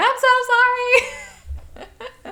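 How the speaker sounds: high, slow, tearful voice.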